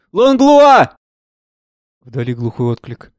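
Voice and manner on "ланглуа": high, loud calling shout carrying far. Maurice calls out for the doctor, Langlois: shouting. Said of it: "Морис кричит".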